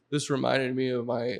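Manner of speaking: mock-tearful crying voice. Retelling what someone said after eating their dish, imitating someone crying. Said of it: "like literally like crying".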